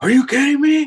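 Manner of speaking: play-acted, very high, loud, thrilled screaming disbelief. Retelling a prize winner's reaction to the call in McDonald's, imitating excited screaming. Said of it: "started screaming in the middle of McDonald's".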